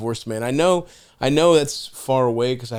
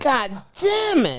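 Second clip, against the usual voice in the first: put-on very high, tiny, weird toddler squeak; 12 semitones higher than usual. Retelling how a baby kept repeating a curse word, in a weird little baby voice. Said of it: "and like that weird little baby voice".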